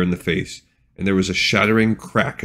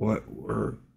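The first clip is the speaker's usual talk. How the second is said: slurred words, much quieter; 11 dB quieter than usual. A young mage barely managing to ask a question, slurred. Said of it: "his voice sounded slurred".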